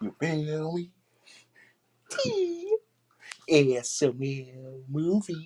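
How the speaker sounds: very high, slow, loud, swooping, stretched-out voice. Showing another speaker an impression of a reactor: Nate P Fleming impression. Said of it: "I could do his impression".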